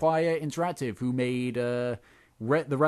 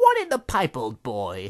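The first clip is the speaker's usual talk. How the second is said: clichéd stock British accent; 5 dB louder than usual. Describing replacing a game character's lines with British variants: stereotypical British accent. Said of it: "talking in a stereotypical British accent".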